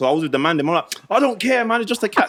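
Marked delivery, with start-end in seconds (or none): 1.1-2.3 mock tough-guy rough talk, pitched up. Retelling what was said to friends about the cat: imitating own rough talk. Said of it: "I was giving it the rough talk".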